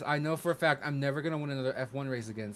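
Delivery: ordinary talk, nothing marked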